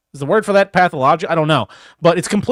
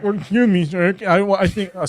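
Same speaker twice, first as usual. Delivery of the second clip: mock shaky, trembling man's voice; 2 semitones higher than usual. Acting out a palsied fellow entering a physician's office: put-on palsied man's voice. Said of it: "I shouldn't do the voice".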